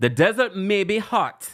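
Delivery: slow, sing-song put-on Jamaican accent. A speaker quotes the Jamaican girl's line, in a Jamaican accent. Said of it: "Let me do a Jamaican accent".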